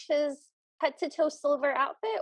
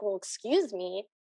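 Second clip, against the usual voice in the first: put-on, mildly angry, annoyed and put-out tone; 7 semitones lower than usual. Retelling how a stepfather turns around and complains: imitating an angry stepfather. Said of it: "kind of angry".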